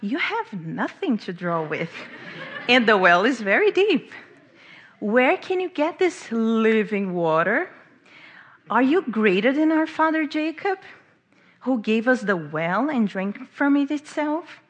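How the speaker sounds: skeptical, mocking, sarcastic, challenging tone. Retelling the woman's challenge to Jesus at the well: imitating a sarcastic retort.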